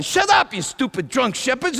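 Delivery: put-on high-pitched yelling. Retelling a night's story, acting out the neighbors yelling at the shepherds. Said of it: "my neighbors are yelling".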